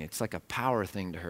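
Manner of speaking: normal talking voice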